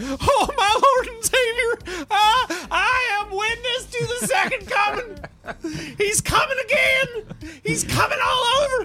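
put-on ugly crying, acted sobbing. Voicing a character who starts crying at a revelation: put-on ugly crying. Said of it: "he just starts ugly crying".

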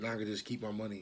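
put-on muttering under breath. Parent retelling what the youngest daughter said, imitating muttering under her breath. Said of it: "under her breath".

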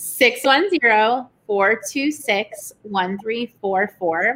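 said slowly, at a slow pace. Reading out the phone number when asked to say it slow: said slowly. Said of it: "Say it slow now for all the people in the back".

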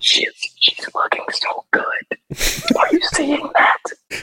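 soft, unvoiced whisper.

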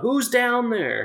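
very high-pitched, shrill yell carrying far. Retelling a stranger calling from up the hill: imitating someone yelling out. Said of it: "he just yelled out".

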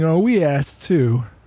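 mock whining. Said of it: "they're all whining".

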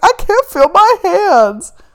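play-acted, very high, loud, drawn-out, tearful sobbed wail. Recounting to a friend what they told Alexis: retelling sobbing. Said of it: "I'm like sobbing".

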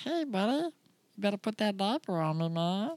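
put-on high, friendly, buddy-style talking old-dog voice. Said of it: "he talks like this".

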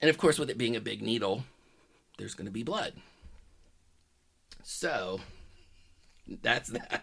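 amused, laugh-filled delivery, talking through laughter. Telling a story about a friend's hospital biopsy, laughing while talking. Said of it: "I'm laughing because this is going to get really good".

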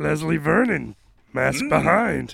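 put-on little alien sage voice. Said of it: "It was a fucking Yoda impression".

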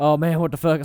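mock huffing and panting. Retelling characters coming out of Mount Zion: imitating huffing and puffing. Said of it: "huffing and puffing".

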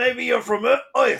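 put-on Brooklyn accent. Retelling a movie scene's dialogue, one character's reply in a brooklyn accent. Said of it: "that's my Brooklyn voice".

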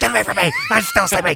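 mock grumpy, furious angry scream, pitched high. Retelling being woken up by an angry partner: imitating someone screaming angrily. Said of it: "Until I woke up screaming at you".

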